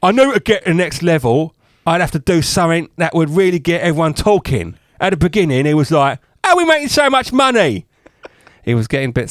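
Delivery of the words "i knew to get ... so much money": bad put-on southern English accent, raised pitch. Quoting a man who told the BBC: failed south of England accent. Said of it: "you can't do a south of England accent".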